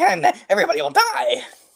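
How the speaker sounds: very high-pitched, raving rant. Voicing a raving brother who warns of the end: raving Beavis voice. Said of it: "He sounds like, like Beavis".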